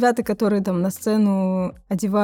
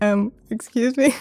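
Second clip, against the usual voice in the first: put-on taken-aback, confused, puzzled tone; 2 semitones higher than usual. Retelling own reply to a naked old man waving: imitating own bewildered reply. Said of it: "что это было?".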